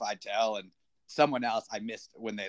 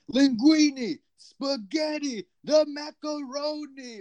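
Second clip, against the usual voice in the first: acted, very high, loud, wild play-by-play screaming; 6 dB louder than usual. Acting out what happened every time Moretti made a play, imitating Dick Vitale screaming. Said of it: "Dick Vitale just started screaming like".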